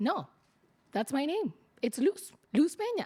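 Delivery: normal talking voice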